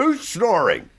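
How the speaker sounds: very high, affronted, indignant tone. Retelling how Jack woke himself snoring, in Jack's mock-indignant voice. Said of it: "In that very indignant Jack voice, is like like an authority".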